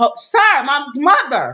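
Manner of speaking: acted, loud shouting.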